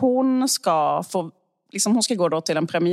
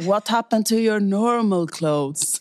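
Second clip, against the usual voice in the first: hissing delivery; 2 semitones higher than usual. Retelling a film scene, the unemployed guy speaks from the couch: retelling Ethan Hawke hissing. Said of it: "liksom väser han nerifrån soffan".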